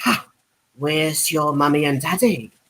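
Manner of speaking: very low, deep, sharp snappy tone. Warming up with some vocal impressions, doing Draco Malfoy clapping back at Harry Potter. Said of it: "Draco Malfoy claps back with".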